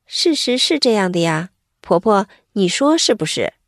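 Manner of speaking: usual speaking voice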